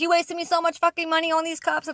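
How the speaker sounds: mock yelling. Retelling a first-day mistake that got the speaker yelled at: imitating someone yelling. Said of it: "yelled at me and was like".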